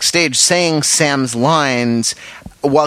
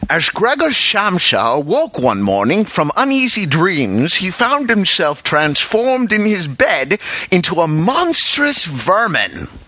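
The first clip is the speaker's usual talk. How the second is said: put-on, sing-song, swooping film-star voice, not very good; 5 semitones higher than usual. Giving an example he admits is not very good, Sean Connery impression. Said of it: "my Sean Connery impersonation is not very good, but you know, I'd like to favor you with a couple of examples here".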